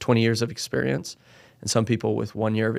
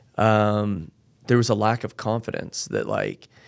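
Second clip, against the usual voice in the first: usual speaking voice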